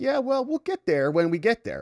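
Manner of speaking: talking dog voice. Voicing the dog, who takes his time to go potty: voicing his dog. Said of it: "Mine will just stare at me like".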